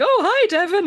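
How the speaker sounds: put-on forced, over-bright cheerfulness, very high pitch. Retelling a character's greeting when caught: imitating a big fake smile. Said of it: "with a big fake smile".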